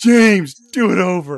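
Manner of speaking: put-on bossy voice. Telling another speaker to redo a recording line: Elijah voice. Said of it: "I'll put on my Elijah voice".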